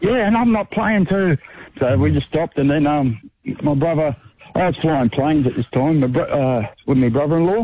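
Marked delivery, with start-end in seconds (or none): 0.0-1.4 high-pitched yell. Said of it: "And then I yelled out".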